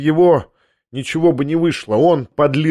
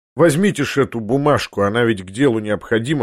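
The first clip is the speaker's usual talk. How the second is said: plain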